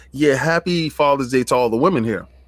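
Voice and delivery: ordinary talk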